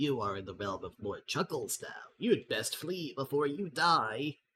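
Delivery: strange gremlin character voice. Narrator voices an unusual gremlin talking to a human, high-pitched gremlin voice. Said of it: "he says in a high-pitched voice".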